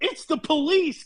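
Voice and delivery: high, sudden, startled blurted exclamation. Reading a fan fiction line aloud where Katie speaks: exclaiming. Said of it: "Katie exclaims".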